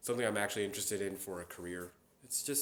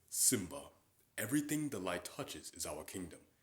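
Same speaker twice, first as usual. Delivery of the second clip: big, deep, open-throated put-on voice; 3 dB quieter than usual. Showing off an impression, speaking to Simba: deep open Mufasa voice. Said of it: "I open up my voice... I can also do Mufasa".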